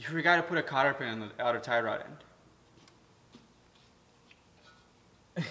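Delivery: scornful, disgusted, disdainful tone. Imitating the alignment tech scolding about a missing cotter pin: imitating a disgusted tech. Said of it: "with disgust".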